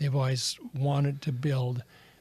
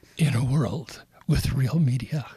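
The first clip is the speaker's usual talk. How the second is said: loud, close-miked movie-trailer announcer voice; 6 dB louder than usual. Asked to do the movie trailer voice close to the mic, doing a movie trailer voice impersonation. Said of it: "do your best impersonation of the movie trailer voice".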